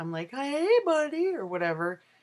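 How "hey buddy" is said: put-on very high, high-pitched, girly pet talk. Describing how she talks to her dog: imitating talking to her dog. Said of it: "when I talk to my dog".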